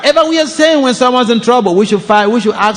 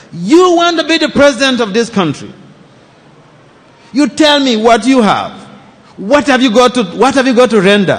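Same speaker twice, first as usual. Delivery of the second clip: put-on sarcastic tone. Retelling an elderly journalist's harassing interview question: imitating a sarcastic journalist. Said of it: "very sarcastically".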